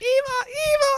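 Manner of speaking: very high, cute, tiny little shout. Describing the moment the robot shouts Eve's name: WALL-E's cute little shouting voice. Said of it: "he's shouting it with his little cute little voice".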